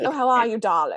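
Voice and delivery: fake mid-Atlantic society accent. Imitating how an actress talks, after being asked to: Katharine Hepburn mid-Atlantic accent. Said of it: "You got your good mid-Atlantic accent going".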